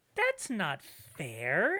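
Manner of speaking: squeaky, loud, little spirit voice. A game master voices someone heard in the distance as players arrive: squeakier voice. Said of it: "in a squeakier voice".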